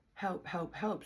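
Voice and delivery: play-acted, mild, half-voiced cry, repeated several times. Recounting looking for someone to call the cops, retelling screaming for help. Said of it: "screaming out help".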